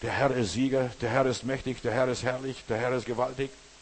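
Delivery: ordinary delivery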